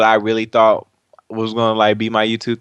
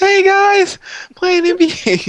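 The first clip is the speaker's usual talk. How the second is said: put-on squeaky little kid commentator voice, very high; 3 dB louder than usual. Imagining having started recording gameplay as a kid, in a squeaky kid commentator voice. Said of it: "some kid commentator with a squeaky voice".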